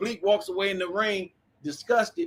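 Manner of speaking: ordinary talk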